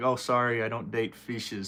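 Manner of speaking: ordinary talk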